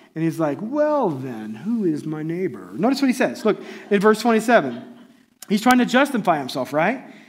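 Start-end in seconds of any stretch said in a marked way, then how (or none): 0.6-2.6 play-acted, kind of smug, drawn-out, swooping tone. Retelling a man's reply to Jesus, imitating a smug tone. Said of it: "he gets kinda smug".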